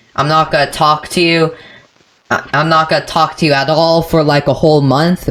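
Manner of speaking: ordinary talk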